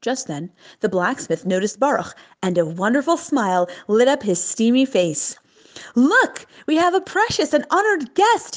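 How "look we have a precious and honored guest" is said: excited, high-pitched calling out. The blacksmith notices a guest and calls to his son excitedly. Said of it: "he called excitedly to his son".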